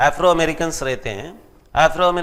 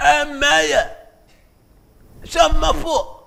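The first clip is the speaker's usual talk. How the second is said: acted very high, rough, drawn-out shouting call; 10 semitones higher than usual. Retelling buying fruit at a station: imitating a fruit seller shouting. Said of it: "Then she was shouting".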